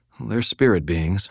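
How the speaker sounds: ordinary delivery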